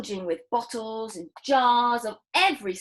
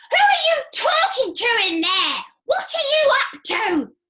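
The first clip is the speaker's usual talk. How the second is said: put-on screechy, very high, loud old woman voice; 12 semitones higher, 6 dB louder than usual. Reading a story, Grandma calls to George from the next room, screechy voice. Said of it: "Came the screechy voice".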